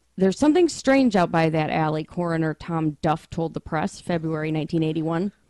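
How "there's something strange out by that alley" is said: usual speaking voice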